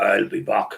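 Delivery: put-on robotic voice with a German accent. Recalling a film line said like a robot: Arnold Schwarzenegger German accent. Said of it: "obviously the German accent, when he was like".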